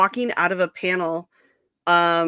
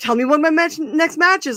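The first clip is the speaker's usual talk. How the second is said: mock shout, higher pitch; 9 semitones higher than usual. Retelling the celebrity shouting back across the hallway: imitating someone screaming back. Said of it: "we're screaming at each other".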